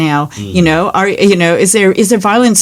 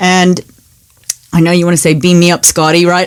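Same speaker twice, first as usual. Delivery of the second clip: ordinary delivery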